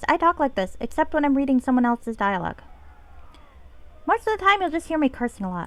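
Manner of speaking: high little sprite voice. Introducing to viewers the voice used for the game character, in the Pixie voice. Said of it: "so this is the Pixie voice".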